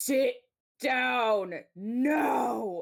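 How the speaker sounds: intimidating voice, drawn-out "no". A player voices her character Astra, mask off, in Astra's super intimidating voice. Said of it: "trying to be super intimidating".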